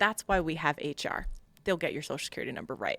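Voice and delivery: plain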